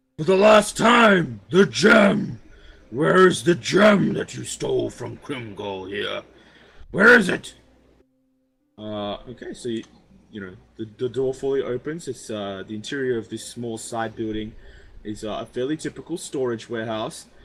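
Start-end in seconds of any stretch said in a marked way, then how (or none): 0.2-7.5 gruff yell at the top of the voice. Narrating a scene, speaker voices someone yelling behind an opening door, gruff yelling voice. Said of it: "you hear like a really gruff voice, clearly yelling at the top of his voice".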